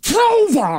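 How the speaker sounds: high-pitched, screaming goblin voice. A game master narrating the fight voices the lead goblin, screaming goblin. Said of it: "he screams".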